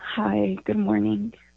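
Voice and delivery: downcast, sorrowful, sad-sounding voice. A caller greets the radio host on air, sad voice. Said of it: "You sound sad".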